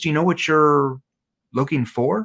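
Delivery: interested, curious, wondering, inquisitive tone. Demonstrating how a question should sound to draw people in, curious tone. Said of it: "See, it's a curious tone".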